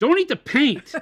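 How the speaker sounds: very high, very loud, shrill, furious yell. Playing a game of saying one line four different ways: angry. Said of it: "say it angry".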